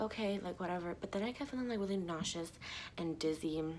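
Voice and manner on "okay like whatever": plain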